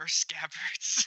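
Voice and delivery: soft, quiet, hushed whisper. Narrating Talbosh's reply to the young scabbard, Talbosh whispering quietly. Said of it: "he just whispers quietly".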